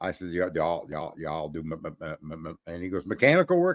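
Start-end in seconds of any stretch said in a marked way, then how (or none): 0.3-2.5 low, soft fake stutter on repeated syllables. Retelling a phone call to a buddy about Cadillac work, imitating a stutter. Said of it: "I would change the sound sound of my voice".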